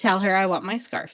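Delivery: ordinary delivery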